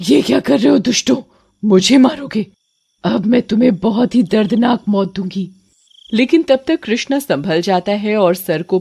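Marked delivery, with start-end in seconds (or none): 0.1-5.5 vengeful, villainous witch voice. In a cartoon story, the witch turns on the villagers: headless vengeful witch voice. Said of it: "चुड़ैल का सर चुड़ैल के हाथ में होता है। / वो इंसानों से अपना बदला ले रही है और ये चुड़ैल टंकी के चौकीदार की बेटी है। उसे कुछ दिन पहले कुछ दरिंदों ने मार डाला था और उसकी गर्दन काटकर उसकी लाश टंकी में ड".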